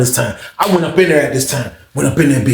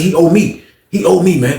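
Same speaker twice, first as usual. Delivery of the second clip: plain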